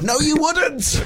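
high, slow mock shout.

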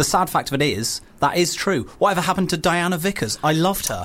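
normal talking voice

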